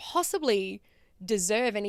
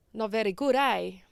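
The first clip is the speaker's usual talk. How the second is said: imitated heavy Italian accent. Retelling a man's verdict on the coin purse the speaker made, in a thick italian accent. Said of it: "he had this really thick Italian accent".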